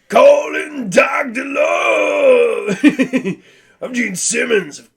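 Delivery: very high, loud, drawn-out voice, "Love" stretched. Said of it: "I used to be able to do [name]".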